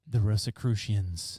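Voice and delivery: low, deep delivery. Asked by another speaker to say the name once more, in a deep voice. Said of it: "one more time in a deep voice".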